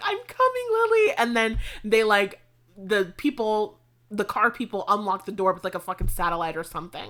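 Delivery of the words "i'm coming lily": shrill, loud, very high scream. Telling a story about Cameron running toward the car, imitating Cameron screaming. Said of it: "He's like screaming".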